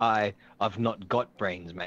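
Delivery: put-on Scottish accent. Retelling what a man in a video told the filmer, Scottish accent. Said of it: "you got to put the accent to it".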